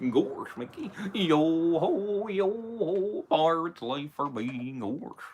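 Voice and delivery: dopey cartoon drawl, stretched-out "yo-ho". Asked which characters they impersonate, after Mickey Mouse: Goofy impression. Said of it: "Or it could even be Goofy".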